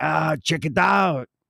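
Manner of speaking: put-on Spanish-accented English, Mexican-sounding. Retelling a friend from Germany's words: imitating a friend sounding Mexican. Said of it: "you sound Mexican".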